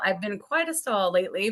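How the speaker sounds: plain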